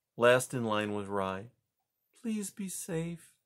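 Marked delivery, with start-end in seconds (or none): 2.3-3.2 hushed, soft, high half-whisper. Rye hugs Poppy and speaks into her ear; half-whispering. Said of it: "he whispered into Poppy's ear".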